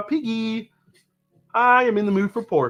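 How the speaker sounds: cartoon frog puppet voice. Showing viewers a frog impression: Kermit the Frog voice. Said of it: "If you haven't heard my Kermit yet".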